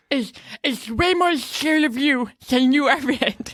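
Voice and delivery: derisive, mocking man's voice, pitched high. Telling a co-host what people say about a fear, in a mocking impression of men. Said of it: "That's my impression of men".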